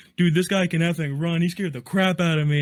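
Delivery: loud yelling, called out. Recalling a man yelling at everybody about his speed, imitating someone yelling. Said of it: "he's yelling".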